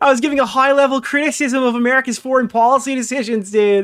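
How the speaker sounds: play-acted, derisive, high, loud sarcastic tone. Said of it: "it was just him screaming".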